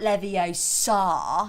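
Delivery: Leviosa with stressed, dragged-out final sa.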